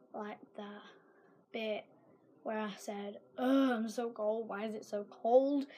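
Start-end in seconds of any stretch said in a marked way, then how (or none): none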